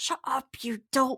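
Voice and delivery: hushed, whispered scolding tone. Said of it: "a couple little whispers".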